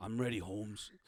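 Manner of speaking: deep character voice. Voicing Hector as he readies himself, in a really deep voice. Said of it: "His voice gets really deep".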